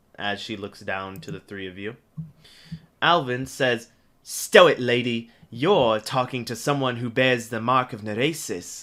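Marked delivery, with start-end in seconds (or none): 4.2-8.8 proud, brash, bursting with pride. Narrator voicing Alvin answering a lady who bars entry: Alvin voice, beaming with pride. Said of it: "as he beams with pride".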